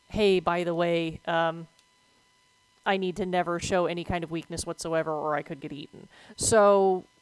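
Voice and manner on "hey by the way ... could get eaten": ordinary delivery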